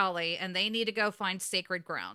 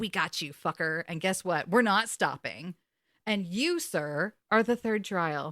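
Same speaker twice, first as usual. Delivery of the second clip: put-on gloating voice. Retelling a TV scene, imitating Dean taunting Crowley. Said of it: "And Dean's like".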